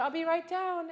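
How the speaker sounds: eager, high-pitched, loud delivery. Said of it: "Cue the, cue the orchestra, but".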